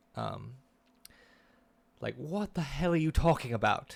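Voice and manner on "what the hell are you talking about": hoity-toity, posh aristocrat voice, pitched up. Voicing a prince from hell in a very noble sounding posh voice. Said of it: "a very noble sounding posh voice".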